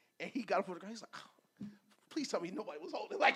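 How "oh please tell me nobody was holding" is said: rattled, breathy, breathed-out near-whisper. Retelling Matt Ryan's words after a holding call: imitating rattled Matt Ryan. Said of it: "you can hear it in his voice where he was getting rattled".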